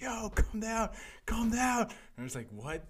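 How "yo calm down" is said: acted scream, much higher, slower. Retelling how the stage manager yelled at them: retelling a scream. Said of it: "the stage manager just screamed at me like".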